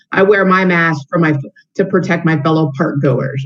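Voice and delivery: plain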